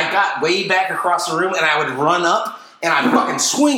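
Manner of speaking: usual speaking voice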